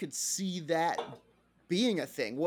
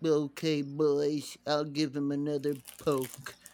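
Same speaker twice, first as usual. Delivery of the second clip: put-on cartoon character voice; 3 semitones lower than usual. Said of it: "Stop talking like Droopy".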